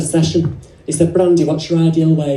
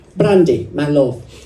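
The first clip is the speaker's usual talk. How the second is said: clumsy, brief, bad put-on Italian accent. Retelling what Luca said when he came in, imitating Luca, bad Italian accent. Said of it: "That's as far as I go with an Italian accent".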